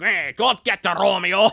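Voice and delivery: booming, high-pitched character voice, barked out loud. Retelling a moment with the listener, in a Wario voice. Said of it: "Again, the Wario voice".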